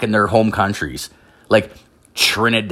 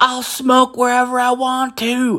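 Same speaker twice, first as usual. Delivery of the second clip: piercing, shrill, very high, drawn-out scream. Retelling a kid holding a sign who yelled at the speaker's car, retelling a kid's scream. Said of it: "he's just screaming, like literally screaming".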